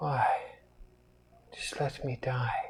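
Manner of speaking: barely audible, very weak, hushed voice. Narrator voicing the prisoner Hewitt as pirates come for him: very weak voice. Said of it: "you hear Hewitt very weakly".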